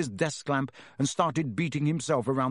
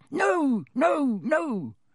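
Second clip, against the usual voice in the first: squeaky little elf voice, very high, swooping squeak; 12 semitones higher, 3 dB louder than usual. Narrator reads Dobby's reply to Harry in a squeaky Dobby voice. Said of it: "squeaked Dobby".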